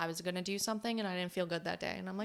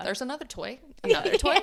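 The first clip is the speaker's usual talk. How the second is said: very loud, insistent, pitched-up dog voice; 7 semitones higher, 11 dB louder than usual. Voicing the dog who brings a toy to get played with: voicing the dog. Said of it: "He's like".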